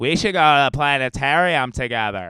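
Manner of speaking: put-on drunk woman voice. Retelling what a very drunk woman said after a show: imitating a very drunk girl. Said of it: "That's how she sounded".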